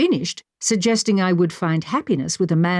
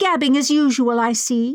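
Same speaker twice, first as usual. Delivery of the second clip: bubbly, fizzy, pitched-up voice; 6 semitones higher than usual. Millicent, entering the room, to two students talking, in a bubbly voice. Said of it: "she said in her bubbly voice".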